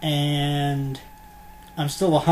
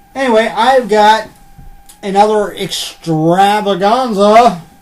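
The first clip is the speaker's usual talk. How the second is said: extravaganza stretched slow, high and loud. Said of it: "that's how you gotta say it".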